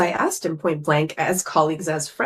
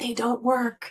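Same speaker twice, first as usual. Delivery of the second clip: hushed, secretive, confidential stage half-whisper; 4 semitones higher, 4 dB quieter than usual. Retelling what a doctor said quietly in a hallway: imitating someone half-whispering. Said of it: "whispered to me so the receptionist wouldn't hear".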